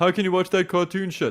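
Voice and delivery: high, mocking, snobby voice.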